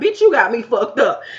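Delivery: put-on sassy tone. Retelling how a man answered a woman: imitating a sassy reply. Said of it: "basically being sassy towards her".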